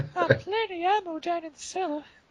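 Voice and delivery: creepy too-relaxed voice. Quoting a video game character that the speakers distrust; creepy too-relaxed voice. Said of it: "A pedophile voice, exactly".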